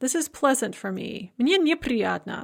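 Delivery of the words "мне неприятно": ordinary delivery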